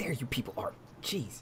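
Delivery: very quiet, faint whisper, close up. Narrating a game, the speaker voices Smiley whispering into a player's ear. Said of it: "you hear whispered in your ear".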